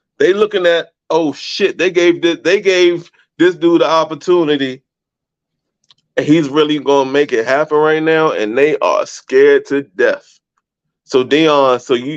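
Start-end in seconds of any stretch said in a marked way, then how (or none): none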